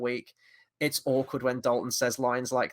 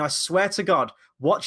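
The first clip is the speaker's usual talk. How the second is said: ordinary delivery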